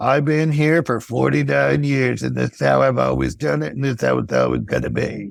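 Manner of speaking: creaky, harsh, rough chain-smoker's rasp. Speaker imitating a longtime old-school employee, harsh smoker voice. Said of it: "maybe I use a harsh smoker voice".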